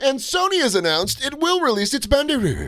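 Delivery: very high, swooping TV news reporter voice. Recalling a favorite bit, the speaker quotes the reporter in a tv news reporter voice. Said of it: "The reporter voice always gets me".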